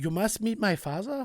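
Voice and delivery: put-on Berliner German accent. Speaker voices a female character who has a Berliner accent, Berliner German accent. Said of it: "That's pretty good".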